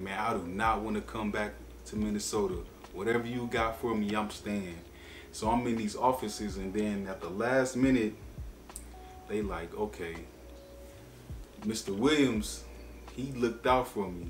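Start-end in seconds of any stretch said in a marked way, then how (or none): none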